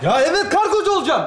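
mild, half-shouted yell kept small. In a scene, snapping back at another character's question, shouting. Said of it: "Ne bağırıyorsun lan?".

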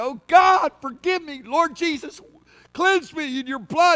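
desperate crying out. Acting out a believer who slipped, crying out to God: crying out to God. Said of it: "we cry out to God".

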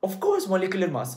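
voice cracking. Reviewing molecular mass and net charge for listeners, the speaker's voice cracking. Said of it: "my voice cracking is crazy".

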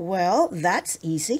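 ordinary delivery, nothing marked

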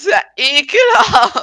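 drawn-out, loud disgusted tone.

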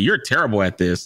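ordinary talk

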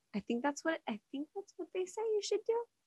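high, soft, sarcastic tone. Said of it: "that's me being sarcastic".

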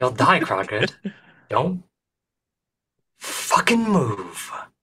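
slow, menacing, intimidating put-on voice. Sending a spell message to an enemy, intimidating threat in character. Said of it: "I'm trying to intimidate this individual".

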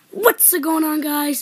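enthusiastic, excited, drawn-out delivery. Demonstrating greeting voices for viewers to vote on, an excited greeting. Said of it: "Put excited down in the comment".

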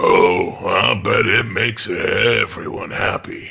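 slow delivery through a low chuckle. A man caressing a woman's shoulder answers her, chuckling. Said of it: "he chuckled".

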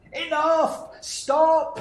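very high, shouted outburst. Narrating a story, the young lass shouts at the ogre soaking the floor: shouting. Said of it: "shouted the young lass".

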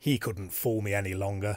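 ordinary delivery

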